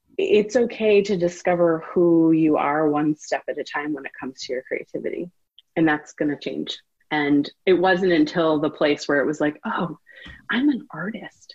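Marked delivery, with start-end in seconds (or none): 9.7-11.6 soft, slow, barely voiced whisper. Retelling a thought from the past: whispering. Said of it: "I'm whispering that because at the time it was a whisper".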